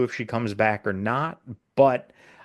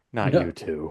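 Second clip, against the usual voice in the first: mock utterly deflated, defeated tone; 7 semitones lower than usual. Retelling a scene where a character is pestered about shore leave: imitating someone sounding defeated. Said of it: "He's just, just so defeated".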